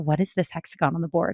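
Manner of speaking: baffled, hushed stage half-whisper. Retelling a question asked to a friend in class: retelling a half-whisper. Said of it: "I whispered to my friend Marilyn".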